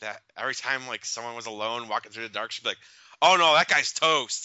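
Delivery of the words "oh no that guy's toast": booming, very loud, high-pitched, drawn-out carrying call. Retelling a woman a few rows back at a scary movie, real loud. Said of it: "real loud".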